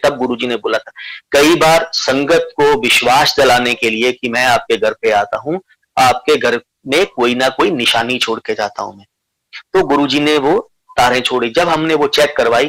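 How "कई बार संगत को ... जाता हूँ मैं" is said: ordinary talk, nothing marked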